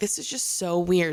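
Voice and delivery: ordinary talk, nothing marked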